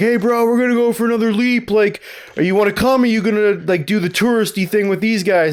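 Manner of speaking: high, easy, relaxed calling out. Retelling a story where others yelled at him: imitating people yelling. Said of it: "they're yelling at him and they're like".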